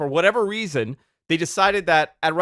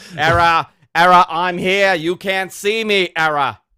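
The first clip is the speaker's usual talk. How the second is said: put-on loud Boston accent, politician-style voice; 7 dB louder than usual. Riffing on a melting clone in a comedy bit, in a Mayor Quimby voice. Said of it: "he sounds like Mayor Quimby from The Simpsons".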